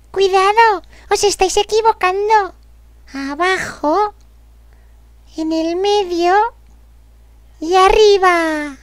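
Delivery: high bird voice.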